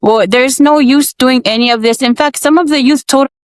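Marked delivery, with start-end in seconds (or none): none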